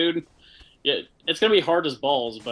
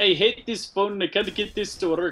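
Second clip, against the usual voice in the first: put-on heavy Russian accent, laid on thick, pitched up; 7 semitones higher than usual. Retelling what an old russian woman said about her phone, thick russian accent. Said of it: "she had a super thick accent".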